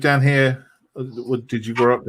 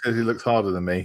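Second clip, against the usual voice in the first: ordinary delivery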